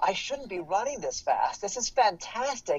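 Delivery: put-on bright, upbeat, enthusiastic voice. Acting out a runner's inner voice during a race: acting out an enthusiastic inner voice. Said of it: "that enthusiastic voice of positivity".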